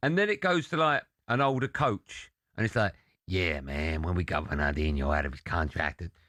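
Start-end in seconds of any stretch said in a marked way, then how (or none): 3.3-6.0 put-on American dubbed-voice accent. Retelling the dubbed documentary's older coach: imitating an american dubbed voice. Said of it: "American dubbed voice".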